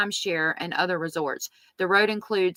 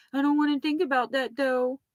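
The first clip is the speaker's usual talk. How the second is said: high, fake, whiny put-on voice; 7 semitones higher than usual. Retelling her reaction when they talk about the gators, in a put-on high-pitched whiny voice. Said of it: "she tries to get the high-pitched, whiny voice".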